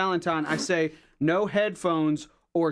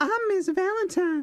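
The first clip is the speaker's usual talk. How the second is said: really high, way-up-top teacher voice; 14 semitones higher than usual. Trying out a line in character, asking whether to go high: really high Miss Valentine voice. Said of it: "Should I go high, like, really high".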